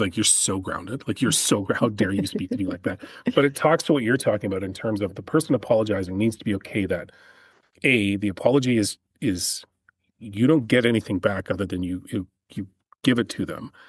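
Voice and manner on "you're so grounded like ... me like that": acted jokingly upset, playful mock outrage. Retelling how a mother scolded her kid, imitating jokingly upset. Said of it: "she was jokingly upset".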